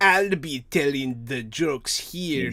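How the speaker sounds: put-on German accent. Quoting what he said about the jokes, German accent as Drew. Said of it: "That's my German accent".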